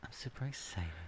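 hushed, eerie whisper with fake, creepy excitement. Answering a co-host who keeps saying stop: put-on creepy excitement. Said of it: "that seemed kinda creepy".

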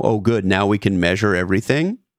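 ordinary talk, nothing marked

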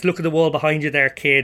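ordinary talk, nothing marked

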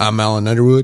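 buttery smooth, low Southern California voice. Showing he can do the other speaker's voice, smooth Southern Californian Alan Underwood impression. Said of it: "that buttery smooth Southern Californian voice".

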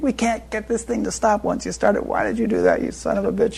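play-acted shrill, swooping, high, furious screaming tirade. Retelling a fire alarm mishap, the speaker imitates the man running the center screaming and yelling. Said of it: "was screaming and yelling".

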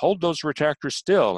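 loud, high, hollered voice. Retelling a surgeon's order during spinal surgery, imitating a surgeon hollering. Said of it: "the surgeon was hollering at him".

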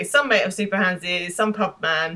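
ordinary talk

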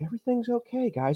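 very high, soft, hushed manipulative voice. Describing Bill Gates sitting there talking, doing his soft voice. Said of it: "he's got that real soft voice".

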